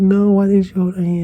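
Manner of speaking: acted, distraught, high, tearful screaming. Retelling screaming at a cousin while crying in a front yard: retelling own screaming. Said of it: "I was screaming at my cousin".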